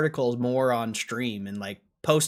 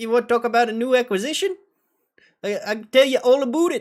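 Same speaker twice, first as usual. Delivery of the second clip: botched put-on Canadian accent, very high pitch; 11 semitones higher, 6 dB louder than usual. Acting out what someone will say, bad canadian accent. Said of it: "I can't do a Canadian accent".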